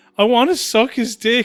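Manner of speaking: play-acted sobbing through tears, high and loud. Retelling a video of a girl waking from surgery: imitating someone crying. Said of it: "crying and she goes".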